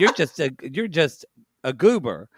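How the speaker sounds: ordinary talk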